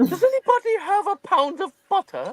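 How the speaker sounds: put-on very high cooking-show host accent. Mid-scene, after someone remarks the accent turned into Julia Child: Julia Child accent. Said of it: "when the hell did this accent turn into".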